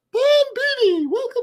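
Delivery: bad put-on cartoon mouse voice. Greeting the podcast listeners in a horrible Mickey Mouse impression. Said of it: "my Mickey Mouse impression is horrible".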